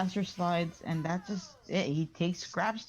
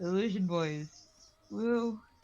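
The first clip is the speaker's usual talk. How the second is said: ordinary talk, nothing marked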